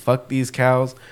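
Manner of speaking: mock angry, fed-up, pissed-off, done-with-everything tone. Retelling walking behind the cows: imitating own angry mutter. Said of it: "pissed off".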